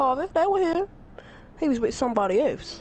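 female character voice. Mocking a woman about to snitch, imitating how she'd talk. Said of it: "That's how she gonna talk".

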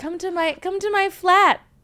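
put-on British male voice. Imitating what UK guys say to an American: mock British accent. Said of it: "They go".

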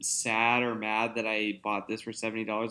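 ordinary talk

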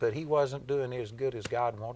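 plain

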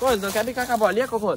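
loud, fast coaxing voice.

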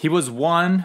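plain

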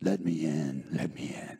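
very deep, low, slow, dragged-out devil voice. Telling a story and showing how the devil figure talks, in a devil voice. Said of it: "he talks like this".

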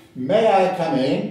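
put-on strong, very British accent, loud and slow. Retelling a visitor knocking at the speaker's office door, very British voice. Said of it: "a very, very British voice says".

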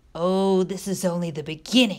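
said with a scoff. Narrating a story, reading Bradley's reply to Bartleby, scoffed. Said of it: "scoffed Bradley".

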